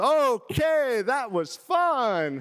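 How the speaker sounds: very high shout with fun stretched long. Retelling a family story, mom reacts after a fall: imitating mom yelling. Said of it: "my mom yells".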